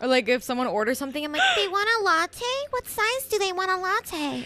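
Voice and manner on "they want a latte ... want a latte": put-on very high, squeaky anime girl character voice. Showing a put-on voice for taking an order at work: anime girl voice. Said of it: "She sounds like some anime girl".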